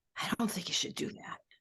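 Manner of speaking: faint, barely voiced, very soft whisper. Describing a little inner voice, imitating a whisper. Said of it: "this very whispering voice saying".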